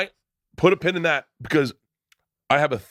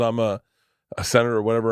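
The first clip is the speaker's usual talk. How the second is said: ordinary talk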